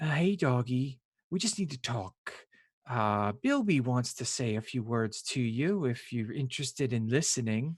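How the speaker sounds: put-on female character voice. Voicing a woman who speaks to a shifted character: woman's voice. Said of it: "a woman's voice goes".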